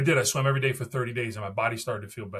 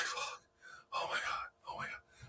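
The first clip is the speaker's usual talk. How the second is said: terrified, slow, breathy, panicked whisper. Retelling lining up for a first triathlon swim start: retelling own panic. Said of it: "I'm completely panicking".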